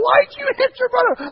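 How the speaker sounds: drill-sergeant yell, very high-pitched and very loud. Retelling yelling at a five-year-old who punched his brother: imitating own yelling. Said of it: "I'm yelling in his face".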